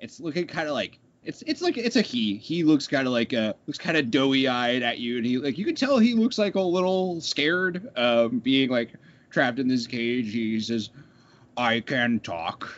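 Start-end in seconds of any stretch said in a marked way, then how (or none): 11.6-12.7 put-on troll creature voice. Voicing a scared troll trapped in a cage: troll voice. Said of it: "a good troll voice".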